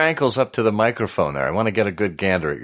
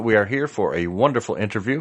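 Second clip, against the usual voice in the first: normal talking voice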